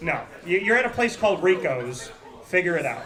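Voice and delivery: ordinary talk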